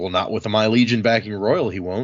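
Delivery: ordinary talk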